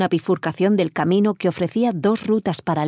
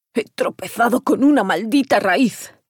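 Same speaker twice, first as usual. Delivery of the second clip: growl through clenched, gritted teeth; 3 semitones higher than usual. Stroll answers Ferreiro, who asks why the group stopped, growled through clenched teeth. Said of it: "gruñó Stroll apretando los dientes".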